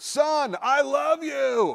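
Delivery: very high, very slow, drawn-out bellow. Former school wrestler recalls his dad calling out from the crowd, bellowing. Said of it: "my dad's bellowing voice".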